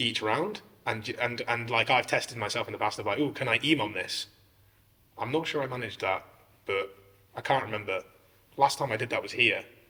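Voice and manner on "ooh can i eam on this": usual speaking voice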